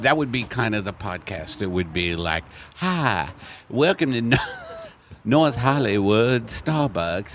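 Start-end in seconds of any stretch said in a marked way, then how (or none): 2.7-7.4 light put-on Southern accent. Joking about a podcast greeting, speaking in a southern accent. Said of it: "I'm kind of doing a uh, southern accent".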